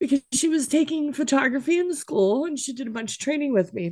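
talking through tears. Talking about her daughter helping with her photography work, crying while talking. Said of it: "Apologies for the crying".

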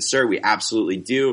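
normal talking voice

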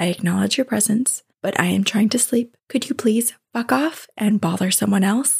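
hushed, quiet, firm and resolute tone. Retelling telling an unseen presence to leave, not waking a friend: retelling a quiet but firm request. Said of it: "I said quietly".

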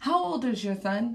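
fed-up, frustrated delivery. Retelling what a frustrated mom asked: imitating a frustrated mom. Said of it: "with her face all frustrated".

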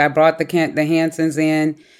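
usual speaking voice

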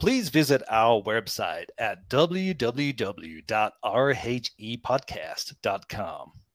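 slightly awkward put-on American accent. Asked to plug the channel, the speaker tries it in an American accent. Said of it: "plugging my channel, but in an American accent".

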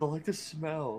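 soft, slow and quiet. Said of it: "he just kinda quietly goes".

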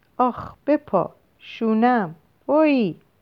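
high, very slow, drawn-out cry of pain. Linda speaks to a child clinging to her neck, crying out. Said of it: "لیندا داد کشید".

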